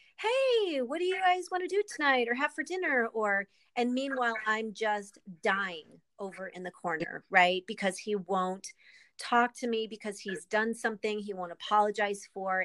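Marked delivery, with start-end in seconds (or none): 0.2-3.1 put-on very high, airy, breezy casual voice. Recounting how he talked to the kids while ignoring me, imitating his casual voice. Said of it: "he'd talk in that voice like".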